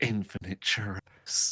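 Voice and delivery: whispering under breath. Playing a character receiving ten churros: whispering under breath. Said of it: "you hear me whisper under my breath".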